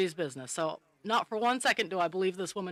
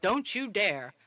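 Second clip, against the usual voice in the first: mock big girl voice, firm, commanding, projected. Retelling warning a young staff member across the dining room, in her big girl voice. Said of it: "in my big girl voice".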